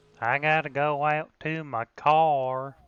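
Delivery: fake Southern US accent. Asked for a little sample, giving a put-on southern accent. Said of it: "Give me a little sample".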